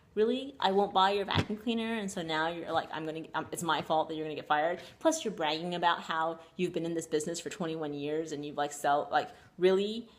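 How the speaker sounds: ordinary talk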